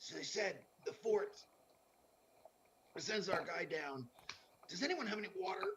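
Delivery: rough, rasping, raspy delivery. In a role-play, telling the group what the fort said, in a raspy voice. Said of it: "I'm just gonna be talking like in a raspy voice for a while here".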